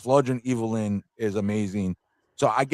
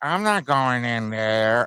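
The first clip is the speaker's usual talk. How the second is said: timid, meek, small voice, very slow and drawn out. Complaining about the adult cat's voice: imitating Cringer's meek voice. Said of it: "He was like this".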